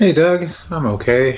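flat, unenthusiastic, unexcited tone. Answering the co-host's greeting on how they are: unenthusiastic tone. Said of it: "That didn't sound very enthusiastic".

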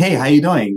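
quick, reflexive, high, loud, breezy tone.

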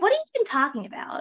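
high, fast, incredulous, disbelieving outburst.

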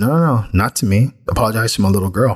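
ordinary delivery

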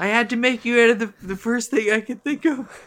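pitched-way-up character voice.

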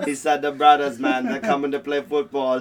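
poorly done, botched put-on Jamaican accent. Listing states for football teams, retelling what he said in a bad accent that sounds Jamaican. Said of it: "you messed up the accent".

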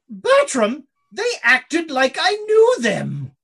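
loud, swooping, grand posh aristocrat voice, drawn out. Narrating a closing door, then voicing the Duchess speaking to Bertram: voicing the Duchess. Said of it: "you distinctly hear the, the, the Duchess".

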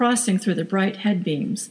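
ordinary delivery

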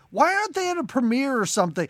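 mock exasperated outburst. Retelling an outburst at the end of a movie: imitating own annoyed outburst. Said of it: "I was so pissed".

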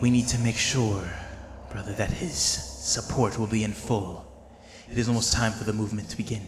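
soft, coarse voice. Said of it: "kind of more soft and more coarse".

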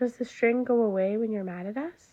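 plain reading voice

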